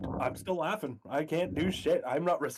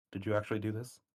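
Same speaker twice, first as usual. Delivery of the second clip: hushed whisper, much lower; 4 semitones lower than usual. A player's character comes over and asks another character: whispering. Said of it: "I'm whispering to him and be like".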